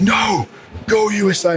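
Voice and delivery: acted high scream. Telling a story about a man at a match: retelling a man's scream. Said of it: "and he screams".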